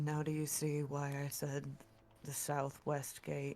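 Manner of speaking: stealthy, very low, hushed, barely audible half-whisper. Voicing Lychee sneaking near guards, warning the group: very low half-whisper. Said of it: "very low whisper says".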